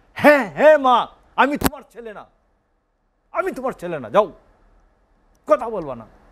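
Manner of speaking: roaring voice. Retelling a son's answer to his scolding mother: imitating a roaring reply. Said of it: "গর্জন করে উঠে বলে".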